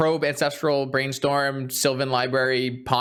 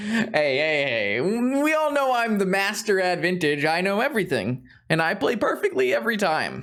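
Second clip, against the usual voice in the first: sing-song, laid-on sarcastic self-praising tone; 5 semitones higher than usual. Commenting on own game play after a misplay: sarcastic boasting. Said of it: "that's sarcasm".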